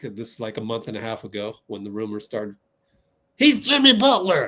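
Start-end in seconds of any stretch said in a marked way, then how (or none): 3.4-4.5 imitated voice pushed very high. Answering the question put to Dean about liking Jimmy Butler, in the Dean Chambers voice. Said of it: "In the Dean Chambers voice".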